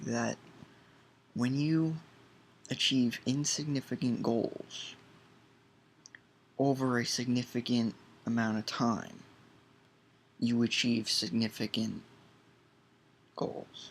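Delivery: dictation-style delivery.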